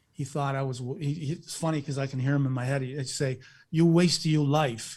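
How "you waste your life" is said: put-on Italian-accented voice. Recalling a father who was against the speaker's path, imitating dad's Italian accent. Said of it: "with his Italian accent".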